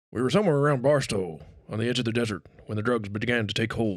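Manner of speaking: put-on slightly old-mannish character voice. Doing an impression of Johnny Depp as Raoul Duke: Johnny Depp as Raoul Duke impression. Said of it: "I'm gonna do my best Johnny as Hunter".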